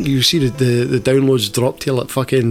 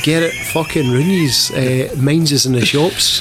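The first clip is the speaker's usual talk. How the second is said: normal talking voice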